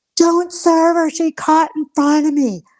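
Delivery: imitated screaming. Retelling a man screaming out his car window while they ordered; retelling a scream. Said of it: "he's screaming out his window".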